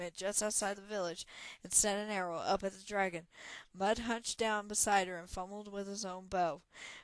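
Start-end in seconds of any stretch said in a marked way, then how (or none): none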